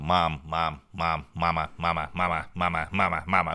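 mock pestering, nagging voice, over and over. Retelling pestering his mom to read to him: imitating nagging a parent. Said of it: "я реально замахав маму".

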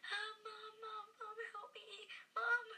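put-on very high, drawn-out, terrified screaming. Retelling a bad reaction to laughing gas: imitating own screaming. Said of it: "I was, like, screaming".

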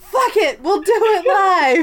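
cable-host style blowup, drawn out, pitched high. Quoting the Bill O'Reilly line after a podcast outburst: Bill O'Reilly impression. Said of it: "she had her Bill O'Reilly moment".

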